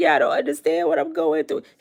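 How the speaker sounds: sobbing through the words, crying and tearful. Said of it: "he'll be crying like".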